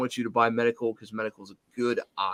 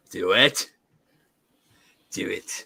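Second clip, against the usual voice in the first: low, evil emperor voice; 5 semitones lower than usual. On a podcast, telling a co-host to go ahead, in an Emperor Palpatine voice. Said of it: "I'm like uh, Emperor Palpatine".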